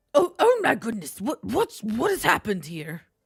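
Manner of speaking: very loud, shrill, flustered, fussing goblin voice. Game master voices a goblin running up to the players: flustered goblin voice. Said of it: "What is this voice?".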